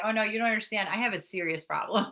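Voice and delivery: mock disdainful, sarcastic, dismissive tone. Retelling a dismissive reply to another mother: imitating own sarcastic disdain. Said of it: "with a sarcastic and a lot of, genuine disdain".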